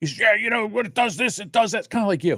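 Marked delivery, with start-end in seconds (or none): 0.2-1.8 put-on high, angry, irritated man's venting voice. Retelling what a man said while talking to him: imitating an angry man. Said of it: "he's really angry".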